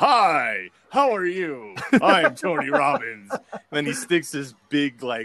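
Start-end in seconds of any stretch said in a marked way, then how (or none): 0.0-3.3 very high, loud, slow, swooping voice. Retelling meeting Tony Robbins while bodyguarding him: imitating Tony Robbins. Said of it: "He was just like".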